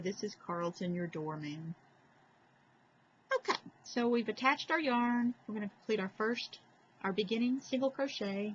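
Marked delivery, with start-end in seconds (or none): 0.0-1.7 low, droning, dead-flat monotone. Imitating Carlton the doorman from Rhoda: monotone Carlton the doorman voice. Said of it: "his voice was always so monotone".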